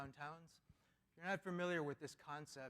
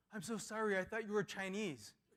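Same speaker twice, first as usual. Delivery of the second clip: put-on frantic, panicked, high and loud delivery; 5 semitones higher, 5 dB louder than usual. Retelling a kid's reply after being confronted, imitating a panicked apology. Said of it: "he panicked and he goes".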